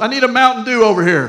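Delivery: loud, high, laughing voice.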